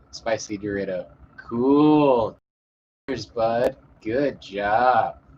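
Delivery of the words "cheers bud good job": mocking, sarcastic tone. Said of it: "Read that sarcastically".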